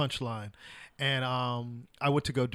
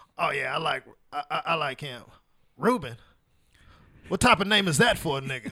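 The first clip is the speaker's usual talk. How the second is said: raspy put-on voice, much slower. Retelling Rodney on stage reacting to your name being called, raspy Rodney impression. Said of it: "and he had this raspy voice".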